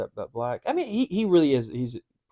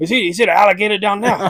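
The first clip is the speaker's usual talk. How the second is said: put-on Cajun accent, much higher, louder; 7 semitones higher, 11 dB louder than usual. Asked to do it with the Cajun accent, playing a character, Cajun accent. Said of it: "do it with the Cajun accent?".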